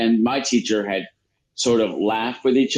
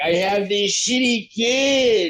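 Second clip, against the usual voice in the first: mock very high, very slow, drawn-out whine; 10 semitones higher than usual. Imitating a mother complaining after hitting her kids: imitating someone whining. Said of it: "she'll start whining".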